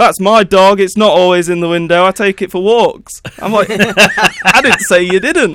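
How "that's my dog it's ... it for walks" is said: irate man's angry shouting. Retelling a dog owner confronting him from behind, imitating someone shouting. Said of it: "he's shouting at me".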